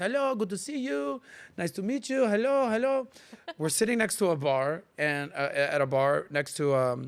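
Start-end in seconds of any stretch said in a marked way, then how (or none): 0.0-3.1 put-on French accent, pitched up. Retelling how the speaker talked at a French bar in Paris, put-on French accent. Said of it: "I'm talking like this the whole time that I'm in Paris".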